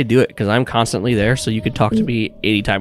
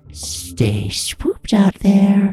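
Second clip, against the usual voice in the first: whispered speech; 10 semitones higher than usual. Voicing a creature from under the bed at the listener's ear: whispering. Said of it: "and it whispers in your ear".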